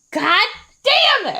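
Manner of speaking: very high-pitched, restrained, held-back frustrated outburst. Imitating a dad who gets frustrated easily, not screaming. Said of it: "I'm not gonna scream it".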